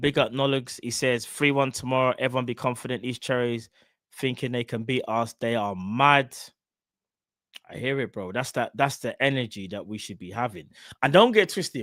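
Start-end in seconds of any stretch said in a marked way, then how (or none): none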